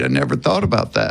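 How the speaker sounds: ordinary delivery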